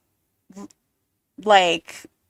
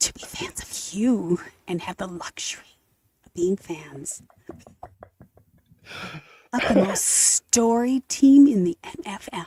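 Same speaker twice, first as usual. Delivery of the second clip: late-night jazz DJ voice. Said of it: "I love that you're trying it out".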